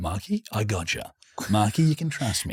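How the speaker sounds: put-on Double Bay voice. Speaker retelling his own reply to Marky in a put-on Double Bay voice. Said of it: "That voice is terrifying because you're so good at it".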